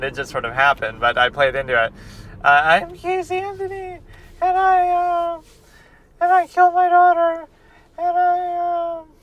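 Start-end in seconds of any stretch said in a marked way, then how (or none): 2.5-9.0 very high, slow, halting weepy voice, stretched "I". Mocking a killer's confession, imitating weepy Casey Anthony. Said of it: "I love that weepy killer thing".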